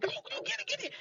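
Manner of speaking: breathy, hushed, whispered cheering. Retelling cheering at a daughter's volleyball game on a phone screen: imitating own screaming. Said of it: "I'm screaming at the, at the screen".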